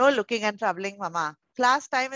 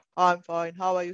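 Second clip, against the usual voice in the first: robotic voice, much lower pitch; 4 semitones lower than usual. Demonstrating how a greeting sounds said like a robot. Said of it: "Like a robot".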